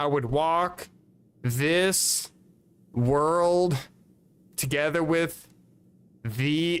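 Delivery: very slow halting reading. Recalling reading aloud in class so teachers would skip them, reading super slow on purpose. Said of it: "I would intentionally read super slow".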